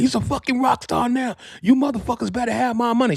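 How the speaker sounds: put-on, very high, shrieking scream. Retelling a manager demanding money from promoters: imitating Deb screaming. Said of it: "She was screaming on the promoters".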